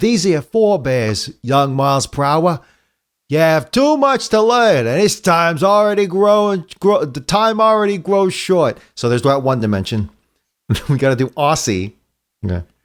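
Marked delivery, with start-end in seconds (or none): 0.0-8.8 Brooklyn accent, played straight. Trying out different voices for a line, doing it in a straight brooklyn accent. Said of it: "the straight Brooklyn would be".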